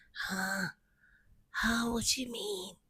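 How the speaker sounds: soft, fake, groggy-sounding voice. Retelling how he answered when she caught him awake, imitating a fake groggy voice. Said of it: "this fake groggy voice".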